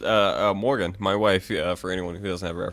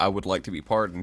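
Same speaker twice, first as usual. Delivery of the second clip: ordinary talk, nothing marked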